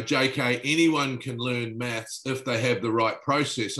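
ordinary delivery

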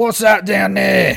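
very loud, raspy, rough hollering orc voice. Narrating a scene, the storyteller voices the orc pointing at the ground, orc voice. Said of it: "the orc looks at you and goes".

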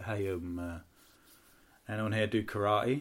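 very slow, low-energy put-on deadpan drawl. Retelling a comedian's opening line to a crowd: imitating a downbeat comedian. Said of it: "he's really downbeat as well".

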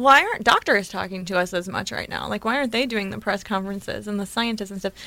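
normal talking voice

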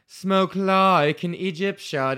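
slow, high, fake British accent. Reading a sponsor's slogan at the end of an ad: put-on British accent. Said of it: "I do a British accent for that".

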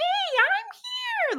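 weird, very high, squeaky put-on voice. Imitating how a written character always talked: weird high-pitched voice. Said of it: "just this weird high-pitched voice".

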